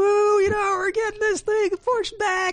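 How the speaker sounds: shrill, very high celebrating cheer. Telling how activists celebrated the delayed meeting, imitating a cheering activist. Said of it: "is that your imitation of an activist?".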